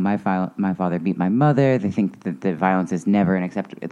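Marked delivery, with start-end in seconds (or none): none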